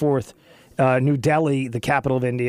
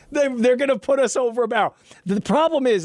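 high-pitched, laughing through the words. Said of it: "and I'm, I'm laughing".

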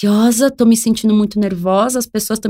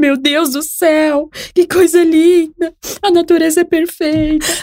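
mock near tears, high, slow, awed; 8 semitones higher than usual. Mocking a hippie moved by the sunset, mock almost-crying. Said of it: "tá quase chorando".

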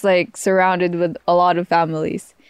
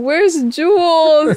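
put-on mock crying voice, higher and louder; 10 semitones higher, 4 dB louder than usual. Retelling a video of someone after the speaker left: imitating Tito Bobby crying. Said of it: "crying, saying".

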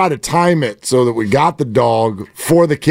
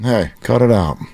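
put-on, very calm, even voice; 2 semitones lower than usual. Retelling how a dog owner scolded his dog: imitating a very calm dog command. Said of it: "That's not how you talk".

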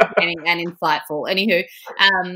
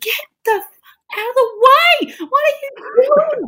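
mock, shrill, screeching yell, very high-pitched; 4 dB louder than usual. Retelling a match moment to other speakers: imitating own screaming at the TV. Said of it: "I was screaming at the T V".

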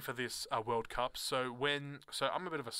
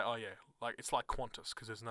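ordinary delivery

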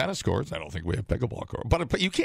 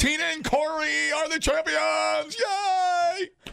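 shrill, very high, rowdy whooping cheer. Acting out a rowdy crowd cheering at pickleball: loud cheering. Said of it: "All I can hear is you yelling".

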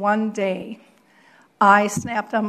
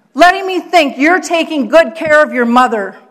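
angry scream, pitched higher and louder; 6 semitones higher, 10 dB louder than usual. Retelling how a friend of the mother screamed in a restaurant: imitating someone screaming angrily. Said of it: "she screamed out in the restaurant".

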